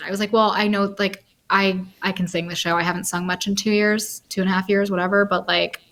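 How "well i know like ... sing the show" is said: usual speaking voice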